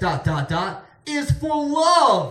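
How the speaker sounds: slow, loud, drawn-out scream.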